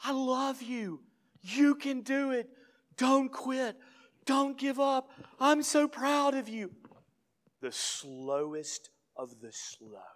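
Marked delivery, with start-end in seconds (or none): 0.0-6.7 very high, loud shouts of encouragement. Retelling a father yelling encouragement to his son: imitating a father yelling encouragement. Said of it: "he just keeps yelling".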